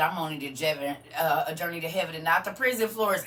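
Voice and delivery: ordinary talk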